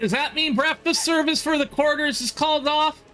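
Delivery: tiny, very high squeaky little voice. A second voice is heard asking about breakfast service, little squeaky voice. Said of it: "little squeakier voice".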